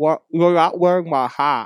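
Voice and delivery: loud, high talk through a mouthful of food. Glargon looks up with a mouthful of bugles and speaks. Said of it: "Glargon looks up with a mouthful of bugles and goes".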